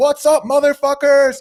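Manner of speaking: play-acted, very high, loud, high-energy voice. Describing how he joins a Zoom call, acting out a high-energy greeting. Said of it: "I'm high energy".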